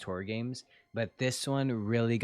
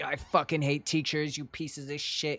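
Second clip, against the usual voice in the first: mock high, furious ghost voice, lashing out; 5 semitones higher than usual. Retelling a story scene where a ghost attacks a teacher: imitating an angry student ghost. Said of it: "he's just a really angry".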